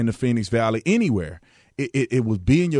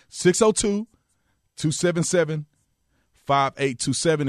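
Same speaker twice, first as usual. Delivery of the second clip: slow, deliberate reading, digits spaced one by one; 4 semitones higher than usual. Repeating a call-in phone number for listeners: said real slow. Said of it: "I'm gonna say it real slow".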